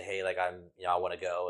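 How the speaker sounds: normal talking voice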